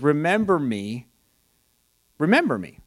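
ordinary talk

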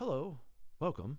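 flat, bored, hollow voice. Narrator voices an ordinary gray man greeting someone, bored and hollow. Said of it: "His bored voice didn't echo, but sounded strangely hollow".

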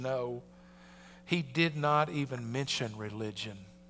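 sheepish sighing reply, very low, soft and hushed. Retelling a pro golfer's reply to his friend, retelling an embarrassed sigh. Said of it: "sighed and with a little embarrassment said".

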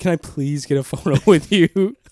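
mock-desperate, put-on pleading voice. Speaker imagines asking a man for a photo, mock-desperate pleading voice. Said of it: "in that desperate voice".

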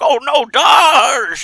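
put-on very high, loud old man voice, drawn out. Describing a scene, the speaker voices Picard in his old man voice. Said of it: "In his old man voice".

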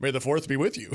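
normal talking voice

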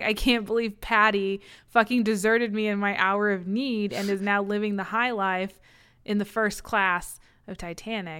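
normal talking voice

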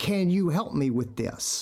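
ordinary talk, nothing marked

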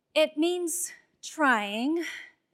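"trying" stressed and stretched out slow.

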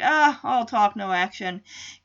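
ordinary delivery

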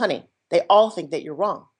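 normal talking voice

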